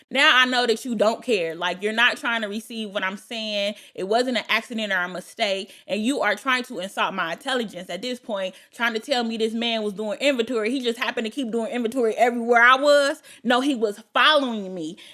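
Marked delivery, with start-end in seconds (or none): none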